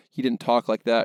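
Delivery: ordinary delivery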